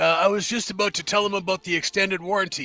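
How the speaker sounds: yelling, shouting. Answering a shout from inside the building: yelling back. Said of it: "and I yell back".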